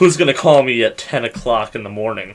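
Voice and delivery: ordinary delivery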